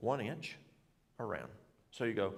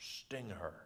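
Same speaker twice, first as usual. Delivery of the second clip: put-on German accent, low and quiet; 4 semitones lower, 8 dB quieter than usual. Retelling a man telling the speaker what to do, in his German voice. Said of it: "in his German voice".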